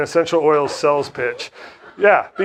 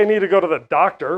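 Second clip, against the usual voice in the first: normal talking voice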